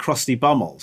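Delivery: ordinary delivery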